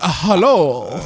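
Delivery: put-on Chinese accent in a woman's voice. Doing a voice after announcing it to the other speaker: put-on Chinese woman voice. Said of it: "I do a Chinese woman too".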